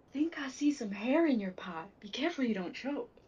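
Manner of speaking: whispered, sly, taunting. In a game, a player casts vicious mockery on a cocky male drow, whispering. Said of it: "And I'm just going to whisper".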